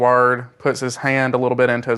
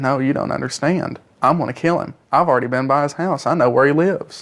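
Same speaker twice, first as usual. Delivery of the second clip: ordinary delivery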